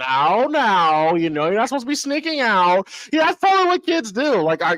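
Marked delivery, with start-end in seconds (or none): 0.0-2.9 preachy, scolding put-on tattletale voice. Retelling an antagonistic kid putting on a voice, mimicking a kid's put-on voice. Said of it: "he was putting on his voice".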